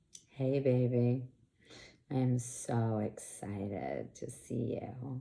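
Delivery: practiced sexy voice, very low, slow and seductive. Recounting a moment in the car, doing a practiced put-on sexy voice. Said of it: "did that sexy voice that I've been practicing".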